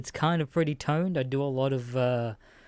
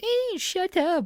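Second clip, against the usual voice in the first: very high-pitched, taunting mock voice, acted out. Retelling how a cinema talker answered being shushed, imitating someone's mocking voice. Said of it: "the mocking voice of them".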